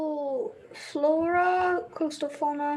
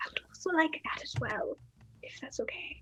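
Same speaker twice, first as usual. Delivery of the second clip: soft, hushed whisper; 8 dB quieter than usual. Asking for the same item, keeping another character from hearing: whispering. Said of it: "I am whispering this".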